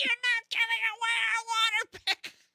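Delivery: very high, shrill voice. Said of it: "you just hear that shrill voice".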